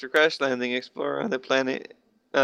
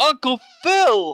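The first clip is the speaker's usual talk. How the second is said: very high, bland, square-sounding delivery; 11 semitones higher than usual. Imagining Will Ferrell playing the Fresh Prince: Will Ferrell as Fresh Prince. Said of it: "He's like the whitest voice".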